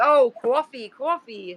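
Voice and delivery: coffee in New York pronunciation. Speaker retells how people teased his accent: New York accent on coffee. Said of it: "they would always get on me about the way I said coffee".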